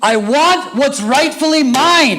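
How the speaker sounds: very high, loud yell, mine stretched out. Retelling a woman's demand at a customer service counter: imitating someone yelling. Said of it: "She yells".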